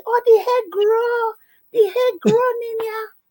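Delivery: very high-pitched voice. Retelling what Mummy said about the hair growing: imitating Mummy. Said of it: "that Mummy said".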